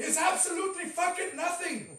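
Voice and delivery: Irish accent, very loud and high-pitched. Ranting about the iPhone, the speaker switches to his Conor McGregor voice. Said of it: "in my Conor McGregor voice".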